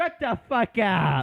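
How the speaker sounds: mock shrill, very high, very slow, drawn-out yelling. Acting out a skit about offering money, then yelling. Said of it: "clip Austin just yelling".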